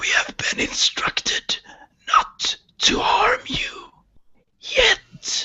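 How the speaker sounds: halting, raspy, drawn-out whisper with phrases breaking. Narrator voicing a Freyin head speaking through its empty voice box: raspy, drawn-out voice. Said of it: "it speaks in a raspy, drawn-out voice".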